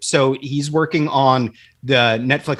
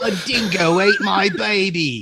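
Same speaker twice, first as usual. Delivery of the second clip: put-on Australian accent, pitched up, baby stretched long; 5 semitones higher than usual. Taking a turn at Australian accents with others, in a put-on Australian accent. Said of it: "Just say random Australian".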